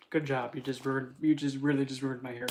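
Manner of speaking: ordinary talk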